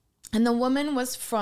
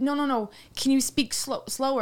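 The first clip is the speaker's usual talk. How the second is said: plain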